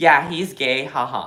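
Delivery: ordinary talk, nothing marked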